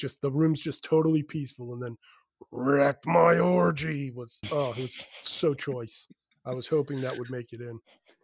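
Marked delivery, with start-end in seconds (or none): 2.5-4.1 put-on rough, loud growled whisper. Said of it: "such a good growl".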